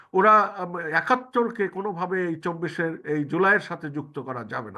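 ordinary talk, nothing marked

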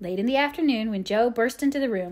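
ordinary delivery

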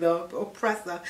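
ordinary talk, nothing marked

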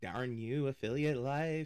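dry, sarcastic, joking tongue-in-cheek grumbling. Complaining about cluttered screens to viewers: sarcastic. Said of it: "he says sarcastically".

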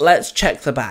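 ordinary delivery, nothing marked

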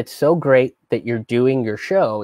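ordinary delivery

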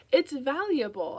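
defensive. [name] answers Ezra's question about the battered hardcover, speaking defensively. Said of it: "I say defensively".

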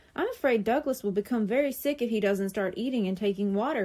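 ordinary talk

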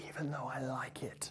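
barely audible whisper under the breath. Presenter closing a punctuation video on the Oxford comma: whispering.

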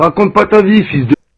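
loud, cutting, mocking heckling shout.

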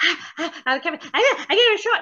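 excited squirrel-like chatter. Retelling getting a vaccine shot, imitating own excited squirrel-like voice. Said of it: "You sound like a squirrel".

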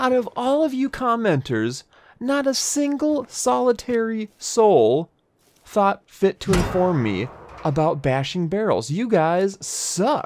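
dripping sarcasm, high, swooping scolding tone. A streamer talks back to the viewers who comment: sarcastic. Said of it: "Sarcasm, FYI".

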